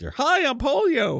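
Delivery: squeaky, very high cartoon character voice. Joking that polio sounds like a cartoon character: put-on cartoon character voice. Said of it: "sounds like a cartoon character".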